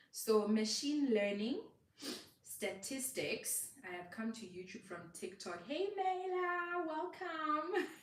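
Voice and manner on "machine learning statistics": slowed, deliberate speech, words spaced out. Teaching viewers, the speaker lists terms speaking slower so they can write them down. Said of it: "I'm going to speak a little bit slower".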